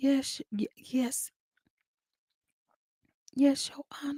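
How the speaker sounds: timid, meek, breathy near-whisper, slow, no bass. Show someone how they sound on the mic saying this, imitating a voice without bass. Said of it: "if you don't put some bass in your voice".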